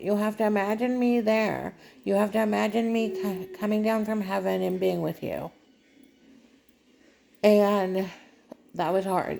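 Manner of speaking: voice fighting back tears. Speaker recalls a conversation with someone now gone: holding back tears. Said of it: "I'm trying not to cry".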